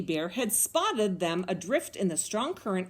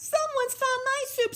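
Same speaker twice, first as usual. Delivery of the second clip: squeaky little voice, way up high. Reading the three bears story aloud, Baby Bear finds his soup: high squeaky Baby Bear voice. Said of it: "sputtered Baby Bear in her high squeaky voice".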